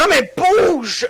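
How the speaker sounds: high, slow, drawn-out yell.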